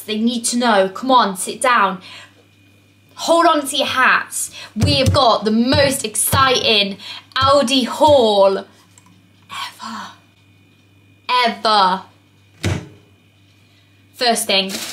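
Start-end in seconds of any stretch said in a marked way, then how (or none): 3.1-12.0 very slow, ironic, sarcastic big build-up. Opening a video about an aldi haul: sarcastic. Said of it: "I was being sarcastic at the beginning".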